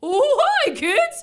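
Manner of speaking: goofy changed voice, very high and loud, silly. Retelling what a man in a creepy mask said: imitating a funny put-on voice. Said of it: "changed his voice completely to try to be funny".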